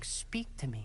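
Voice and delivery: soft, faint whisper. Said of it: "I hear a whisper saying".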